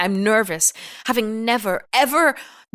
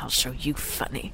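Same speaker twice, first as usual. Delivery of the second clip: quiet mutter under breath, lower and quieter; 8 semitones lower, 11 dB quieter than usual. Acting a parent who is annoyed at a laughing son: muttering under breath. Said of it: "Under my breath".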